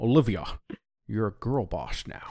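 gravelly, rasping voice. Imitating Leonard Nimoy saying the line in his gravelly voice. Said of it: "Leonard Nimoy says that in his gravelly voice".

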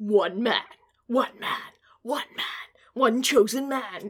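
very slow, epic movie trailer voice-over. Recalling movie trailer supercuts: imitating a movie trailer narrator. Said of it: "the supercuts where they're like".

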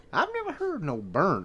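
put-on Oklahoma accent. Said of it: "is that an Oklahoma accent?".

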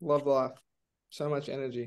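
dry, sarcastic tone.

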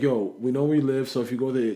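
plain

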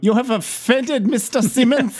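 high, bad German accent.

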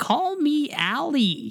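silly, very high, swooping alligator voice. Retelling pretending to be an alligator for a daughter: pretending to be an alligator. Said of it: "I was pretending to be an alligator".

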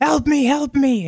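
very high, slow, drawn-out scream. Voicing an unseen stranger heard in the distance: screaming for help. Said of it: "you hear somebody screaming and just going".

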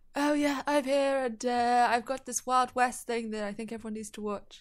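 put-on proper, formal British accent. Doing the voice heard in one's own head: imitating a formal british voice. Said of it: "mine's more formal British".

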